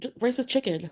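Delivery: irritated, put-upon, somewhat angry tone. Retelling a partner's reply about what he ate: imitating an angry answer. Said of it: "he was kind of angry at his answer".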